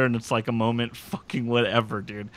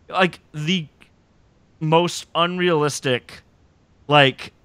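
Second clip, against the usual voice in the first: plain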